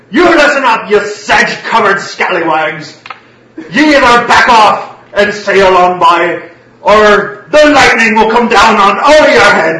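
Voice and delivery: very high-pitched, very loud, shrill, booming shouting. A man yells across at a crew sailing by, yelling a threat. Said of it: "He yells across".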